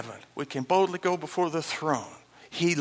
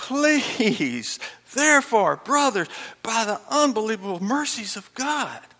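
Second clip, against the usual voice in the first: high, pleading tone. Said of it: "He's pleading with you".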